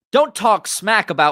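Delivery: high, loud mock American accent.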